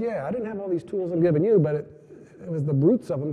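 ordinary talk, nothing marked

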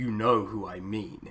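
low, sinister, ominous and menacing tone. Speaker imitates a fascist politician from a TV episode, mock-sinister tone. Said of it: "in a sinister tone".

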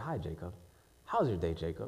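very low, hushed, close half-whisper. Acting out Satan coming to half-whisper in the ear: imitating Satan half-whispering. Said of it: "He's whispering in my ear".

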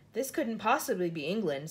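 ordinary talk

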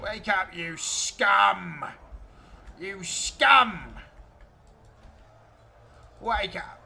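loud, strained put-on orc voice. Commanding units while playing a game, in a hard-to-hold put-on voice. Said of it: "I can't do that voice for very long".

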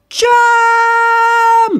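very high, very loud, shrill, stretched-out yell. Narrator reads a mouse warning his friend as an angry cat looms, shouting. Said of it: "shouted Town Mouse".

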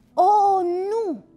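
shouted. Narrating a Christmas story, reading the snowman's line: shouted. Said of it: "Strigă omul de zăpadă".

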